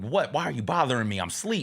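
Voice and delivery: ordinary talk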